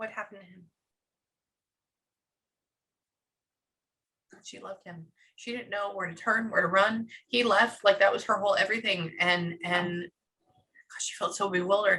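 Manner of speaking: holding back tears. Retelling a woman's story of watching her husband die, holding back tears. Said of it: "I'm gonna cry right now".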